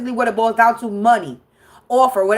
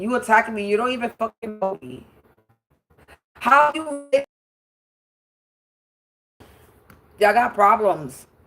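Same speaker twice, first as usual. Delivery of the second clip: amused, laughing between the words; 3 dB quieter than usual. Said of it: "I'm laughing".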